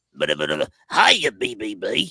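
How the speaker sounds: very low, deep robot voice. Doing a quick impression for the others to guess, robot voice impression. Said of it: "I'm going to do a quick impression".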